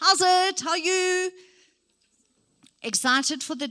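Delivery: eager, bright, very high-pitched and loud. Speaker demonstrates how someone greets a group, enthusiastic greeting. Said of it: "start listening to tone".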